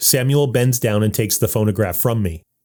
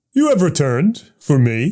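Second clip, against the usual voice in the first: ghostly voice, high, greatly astonished; 5 semitones higher than usual. Narrator picks up the phonograph, and its voice speaks: ghostly voice, greatly surprised. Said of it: "the ghostly voice says with great surprise".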